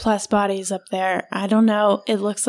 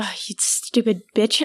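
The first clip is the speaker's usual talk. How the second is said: put-on sighing; 3 dB quieter than usual. Retelling how a woman reacted before going back on deck, imitating her sigh. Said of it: "She sighs like".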